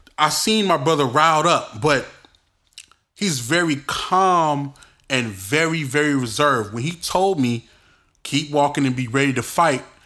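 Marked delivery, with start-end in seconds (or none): none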